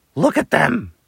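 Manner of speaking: screeching in anger. Narrator reading a story, an owl settling down beside her: screeching angrily. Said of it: "screeched the angry bird".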